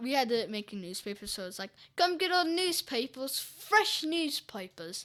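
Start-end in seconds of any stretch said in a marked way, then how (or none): 2.0-5.0 put-on British accent, higher and louder. Retelling selling newspapers in a school role-play: imitating own british accent. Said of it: "I had to speak in a U-, uh, British accent".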